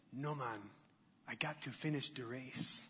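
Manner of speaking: put-on low, soft, murmured Jamaican accent. Retelling the movie's inspirational scene where Sanka speaks: Sanka's Jamaican accent. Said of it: "That's my Jamaican accent".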